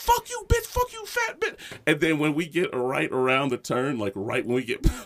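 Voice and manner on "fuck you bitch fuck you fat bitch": very high-pitched, put-on string of cussing. Retelling what the woman heard them shouting: retelling cussing someone out. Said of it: "she heard us cussing her out".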